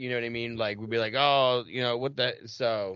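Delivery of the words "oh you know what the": ordinary talk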